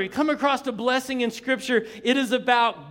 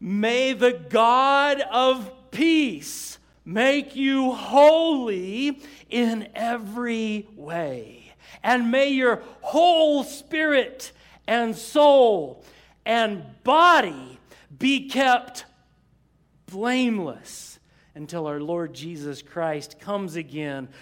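read kind of slowly, very slow reading. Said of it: "So I'm gonna read this kind of slowly".

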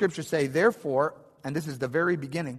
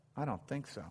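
put-on muttering under breath, quieter; 13 dB quieter than usual. Retelling what a father said during skydiving training: imitating muttering under his breath. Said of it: "under his breath".

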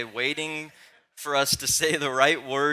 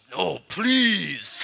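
mock insistent, mean-edged, demanding, raised and high; 5 semitones higher, 5 dB louder than usual. Retelling how he begs for a cookie at bedtime: imitating a mean plea. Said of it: "his please gets meaner and meaner".

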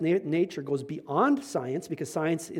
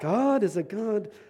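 put-on German accent, pitched up; 5 semitones higher than usual. Trying again to quote Clemens, in Clemens's German accent. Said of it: "saying in his German accent".

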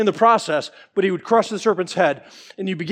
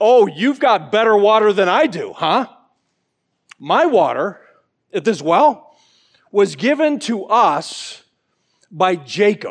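slow, slightly sarcastic, snarky tone. Retelling the woman's reply to Jesus at the well: imitating a snarky reply. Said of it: "probably with a little bit of snark".

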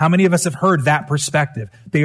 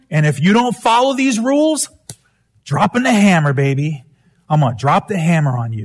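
angry, wrathful, menacing voice like a furious deity. Describing how the culture saw rules: imitating an angry God. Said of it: "the eyes of an angry God".

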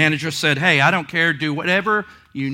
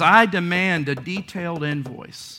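plain

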